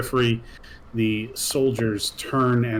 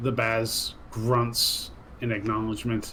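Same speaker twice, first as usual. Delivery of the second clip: plain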